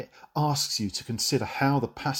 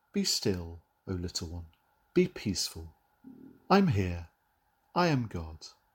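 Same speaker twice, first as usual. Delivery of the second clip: tender, reassuring, gentle, low calming hush; 4 semitones lower, 4 dB quieter than usual. Contrasting God's shouted 'Be still' with how a gentle version would sound; gentle. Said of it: "This isn't a gentle".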